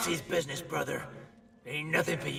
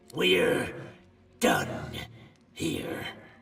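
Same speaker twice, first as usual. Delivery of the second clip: growling through gritted teeth; 3 semitones lower than usual. Narrator reads the dwarf's parting words after pocketing the knife, growled through gritted teeth. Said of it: "Through gritted teeth, the dwarf growls".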